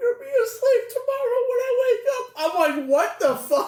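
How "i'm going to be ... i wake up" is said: very high crying, sobbing whine. Mocking a person who was crying: imitating someone crying. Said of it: "he's just crying".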